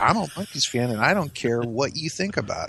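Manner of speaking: ordinary talk, nothing marked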